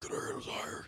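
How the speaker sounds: soft, breathy whisper in a superhero voice. Joking about how someone talks like the movies, Batman voice. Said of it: "the Batman voice".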